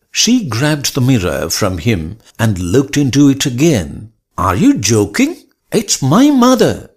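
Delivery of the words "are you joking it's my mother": outcry, very high and climbing throughout. A woman argues with the fisherman over who is in the mirror, cried out. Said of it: "she cried out".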